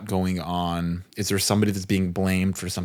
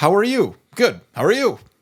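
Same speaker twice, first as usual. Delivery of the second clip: quick, automatic, rehearsed delivery, very high-pitched; 13 semitones higher, 5 dB louder than usual. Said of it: "And it's just so nice and quick".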